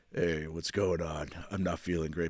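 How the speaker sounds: put-on sexy sick voice, low and sultry. Showing different kinds of sick voice: put-on sexy sick voice. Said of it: "a sexy sick voice where you're just like".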